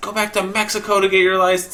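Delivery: mock furious, shrill old man's screaming voice. Telling how an old man screamed at him at a red light; imitating a screaming old man. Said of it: "he's like screaming all this stuff".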